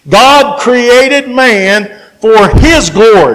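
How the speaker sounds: slow, steady delivery. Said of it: "So I'll try to go as slow as I can".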